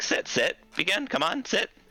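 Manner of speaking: very high, drawn-out tiny woman voice. Narrator voicing a two-foot woman in a rocking chair inviting visitors, tiny woman character voice. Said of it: "she's like".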